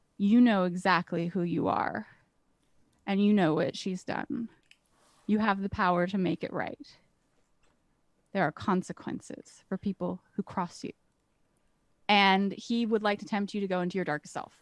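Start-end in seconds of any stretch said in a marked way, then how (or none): 0.2-11.0 low, hushed whisper under the breath. Narrating a scene, the speaker voices a man tempting the listener, whispered under his breath. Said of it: "under his breath he whispers".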